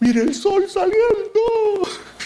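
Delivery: crying, high, slow sobbing.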